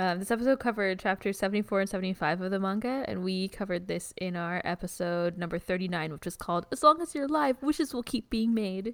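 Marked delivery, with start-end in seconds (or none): 6.7-8.9 poor imitation of a small child. Host naming the title of their earlier episode, in a put-on voice. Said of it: "in that voice".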